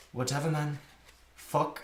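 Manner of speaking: put-on South African accent. Retelling how she answered an interviewer asking about her new album: South African accent. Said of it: "In her like South African accent".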